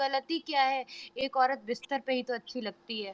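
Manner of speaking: soft, polite, respectful tone.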